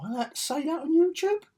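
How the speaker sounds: sudden very high squeaky voice. Speaker reacting right after his own dramatic line, in a high-pitched voice. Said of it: "Don't know why I went high pitched then".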